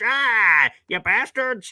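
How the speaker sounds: put-on grumpy old man yell. Complaining about fans' player rankings: mock old man yelling from porch. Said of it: "like an old man here yelling from my porch".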